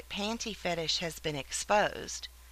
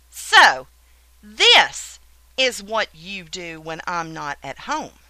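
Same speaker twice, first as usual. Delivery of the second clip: jarringly stern, very loud voice; 2 semitones lower, 10 dB louder than usual. The speaker confronts the listener, caught with the panties in their grip, jarringly stern, demanding. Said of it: "I demand to know in a jarringly stern voice".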